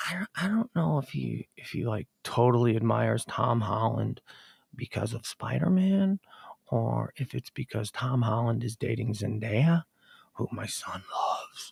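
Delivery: soft, low, hushed half-whisper. Parent talking while their kid is in the next room, half-whispering. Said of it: "so I gotta whisper because he's in the other room".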